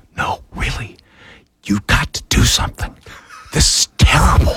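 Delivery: whispered voice. Retelling how a colleague whispered during a live broadcast: imitating someone whispering. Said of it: "He started whispering".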